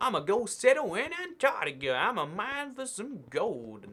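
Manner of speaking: put-on cowboy American accent. Joking about settling Antarctica like the Wild West: put-on Wild West American accent. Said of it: "You like my Wild Wild West accent?".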